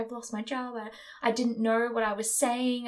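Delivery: put-on blubbering, sobbing, tearful voice. Retelling how a teenager reacted after losing her job: imitating someone crying. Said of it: "crying and".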